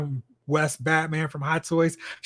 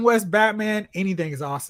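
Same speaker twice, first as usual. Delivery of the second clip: usual speaking voice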